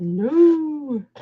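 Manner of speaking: drawn-out, high-pitched put-on voice. Talking about Bible study, answering no in a God voice. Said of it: "In my God voice".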